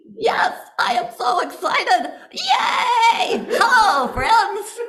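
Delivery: very high, very slow puppet shout. Voicing a hand puppet greeting new friends: hand puppet voice. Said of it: "I will give you my voice and you can talk".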